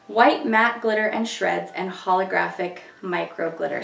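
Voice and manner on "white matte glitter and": plain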